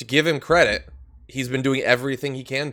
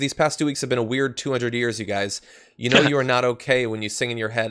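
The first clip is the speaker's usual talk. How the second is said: plain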